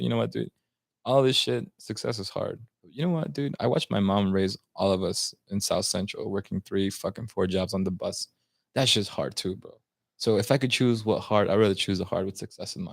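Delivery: ordinary delivery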